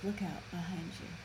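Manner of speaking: faint, very soft half-whisper, barely there. Retelling how a character warns of danger, imitating a half-whisper. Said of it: "she basically whispers".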